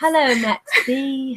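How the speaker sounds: bad, clumsy put-on British accent. Greeting Max after a stumbling intro, bad British accent impression. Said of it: "That's a really bad impression".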